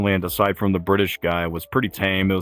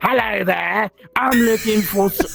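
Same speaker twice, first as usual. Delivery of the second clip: put-on slow, high, chatty elderly British man voice; 14 semitones higher than usual. Telling about old british guys who come up asking for women: imitating old british man. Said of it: "really old British guys come up to you and be like".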